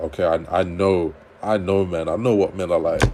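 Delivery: ordinary delivery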